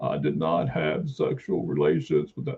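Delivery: slow, breathy put-on voice. Joking about another speaker's impersonation: Bill Clinton impression. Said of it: "I thought you were trying to do Bill Clinton".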